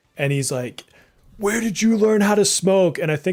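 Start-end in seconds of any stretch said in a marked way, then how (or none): 1.4-3.0 put-on high, loud angry man's voice. Retelling a man catching the speaker smoking, imitating an angry man. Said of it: "he got pissed".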